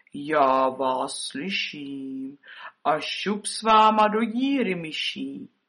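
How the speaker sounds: croaking in a deep, low voice. Narrator voices the death figure appearing over the wall by the gate: deep croaking voice. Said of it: "skřehotala hlubokým hlasem".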